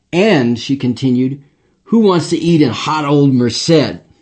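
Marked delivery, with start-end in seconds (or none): 1.8-3.9 acted, openly disdainful and scornful tone. Retelling how she put a lunch vote to the group, mock-disdainful. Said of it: "She said the latter with such disdain".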